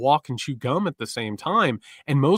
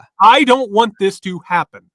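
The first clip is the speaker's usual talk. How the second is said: very loud, exasperated, frustrated, pitched-up outburst; 7 semitones higher, 10 dB louder than usual. Following the other speaker's advice, saying it aloud as an example: frustrated voice. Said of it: "say out loud in a frustrated voice".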